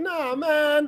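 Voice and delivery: high-pitched, mock protesting reaction. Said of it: "Vanch is like".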